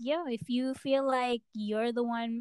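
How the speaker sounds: normal talking voice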